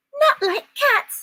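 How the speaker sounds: very high, piercing, shrill, impassioned squeal. The frightened mouse answers Alice, who just mentioned cats: shrill, passionate cry. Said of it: "cried the mouse in a shrill, passionate voice".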